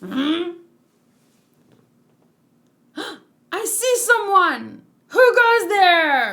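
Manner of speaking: sudden, high, loud sentry-style shout. Shinobu spots someone while keeping watch, shouting. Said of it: "You don't have to shout so loud".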